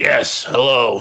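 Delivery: put-on robot villain voice. Greeting the host while trying out a Megatron voice. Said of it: "I'm trying to perfect my Megatron voice".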